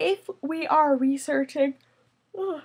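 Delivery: words stretched out by yawning. Explaining research keywords to listeners, yawning. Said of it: "I'm yawning".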